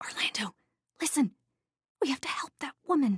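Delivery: loud stage whisper, pitched a touch high. Reading a story, the narrator answers her frightened husband: stage whisper. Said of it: "I am also stage whispering".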